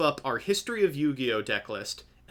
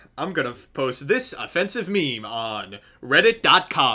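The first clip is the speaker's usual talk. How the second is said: put-on mocking voice, louder; 5 dB louder than usual. Doing a put-on voice while posting a meme: Tony Zaret voice. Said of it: "I can't stop doing the Tony Zaret voice".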